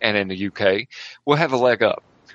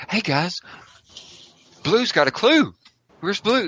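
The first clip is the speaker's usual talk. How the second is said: put-on very animated, pitched-up children's TV enthusiasm; 8 semitones higher than usual. Describing a man's manner, imitating Blue's Clues-style enthusiasm. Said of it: "like really animated".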